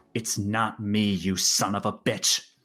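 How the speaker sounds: quiet muttering under the breath. Voicing a character who looks toward the chair, muttering under her breath. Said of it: "just under her breath says".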